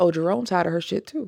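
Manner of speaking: ordinary talk, nothing marked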